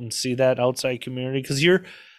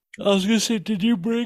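yawning, much higher pitched; 8 semitones higher than usual. Chatting about a weekend trip, starting a question while yawning. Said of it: "sorry I'm yawning".

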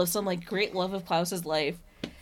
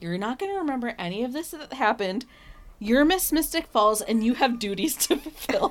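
play-acted, very condescending, patronizing talking-down tone; 4 semitones higher than usual. Recapping an episode, quoting one character speaking to another, mock-condescending. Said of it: "very condescendingly is like".

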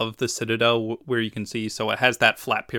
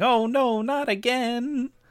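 very high, very slow, squeaky tiny demon voice; 13 semitones higher than usual. Imagining a card's creature as its head falls off again; little demonic voice. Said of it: "its last little demonic voice going".

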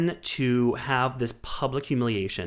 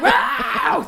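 very high, shrill, loud scream; 7 dB louder than usual. Retelling screaming at Ruth during the award mix-up: imitating own past scream. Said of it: "I start screaming at Ruth".

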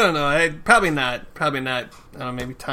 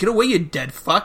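cruel, spiteful, mean, nasty tone; 5 semitones higher than usual. Retelling how someone kept insulting another person: imitating someone saying it meanly. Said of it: "He kept saying it really meanly".

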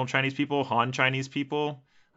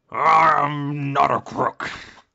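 loud, very slow, with drawn-out I'm; 3 semitones higher, 8 dB louder than usual. Answering a request for an impression: Nixon impression. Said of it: "what's your best Nixon impression?".

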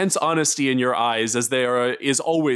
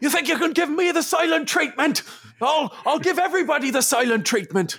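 put-on high shouting in an Irish accent. Retelling a man losing it during a feared FBI raid, shouting in an Irish accent. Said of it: "you hear kind of shouting and you hear the Irish accent".

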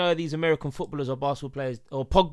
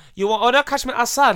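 put-on Chinese-accented grandmother voice; 9 semitones higher, 9 dB louder than usual. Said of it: "I sound like a Chinese nana".

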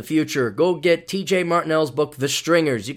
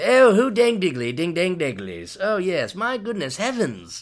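mocking, swooping, put-on fake British accent; 4 semitones higher than usual. Speaker mocks a podcaster whose listeners love his accent: mocking fake British accent. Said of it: "every other British derivative or British guy or guy with an accent".

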